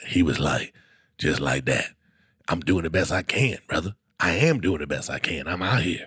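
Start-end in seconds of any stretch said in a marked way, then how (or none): 1.2-6.1 put-on sick-sounding voice, lower and quieter. Retelling a midnight talk with a homeless man outside a gas station: imitating a homeless man's sick-sounding voice. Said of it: "my sick voice is perfect 'cause that's the voice he had".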